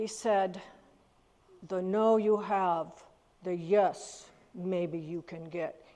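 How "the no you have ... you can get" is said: deliberate put-on Dutch accent, slow and low. Quoting a dutch theater-chain owner he once worked for: dutch accent. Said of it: "he was Dutch, so I always do the accent".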